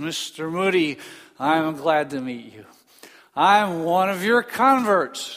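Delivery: mock-slurred drunk speech. Retelling a drunk man greeting a famous man, imitating a slurred voice. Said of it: "he said in a slurred voice".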